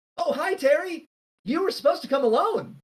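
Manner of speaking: bright, high, cheery little halfling voice. Game master voicing a halfling who opens the door to Terry, brightly. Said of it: "looks up brightly at Terry and says".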